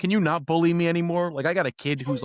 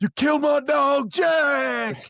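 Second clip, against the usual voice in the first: high, very slow name, stretched and held; 12 semitones higher, 4 dB louder than usual. Doing a wrestler impression from a promo build-up: Jeff Hardy impression. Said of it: "He's like".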